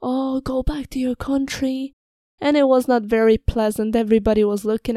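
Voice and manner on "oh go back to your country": imitated drunk man screaming, higher pitch. Retelling a drunk old man who screamed at the speaker, imitating a drunk man screaming. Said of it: "started screaming at me".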